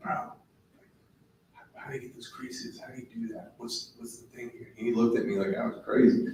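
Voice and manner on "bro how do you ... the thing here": whispered, very quiet. Retelling how he whispered to an older guy who had just joined, retelling a whisper. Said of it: "I'm like whispering to him".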